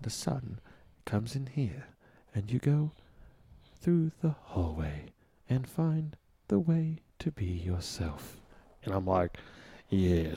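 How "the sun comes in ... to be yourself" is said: put-on deep, buttery British voice, quieter. Tell others about someone you listen to, imitating a deep-voiced British philosopher. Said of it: "British philosopher who's got this really deep voice".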